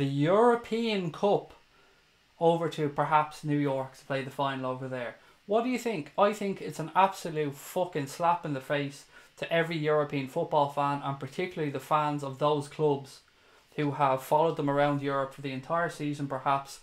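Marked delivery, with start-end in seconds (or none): 0.0-1.5 very slow, deliberate and clear. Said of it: "say this very fucking slowly and clearly".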